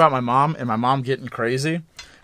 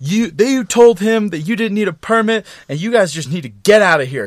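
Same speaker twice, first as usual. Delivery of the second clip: put-on drunken yell, higher pitch; 7 semitones higher, 3 dB louder than usual. Retelling his drunk mom yelling at the cops: imitating his mom yelling. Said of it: "she starts yelling at the cops".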